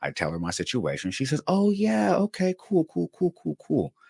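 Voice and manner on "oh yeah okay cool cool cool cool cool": very high, sweetest, nicest possible tone. Retelling a probation officer's reply on the phone: imitating a very nice voice. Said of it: "In the nicest of voices".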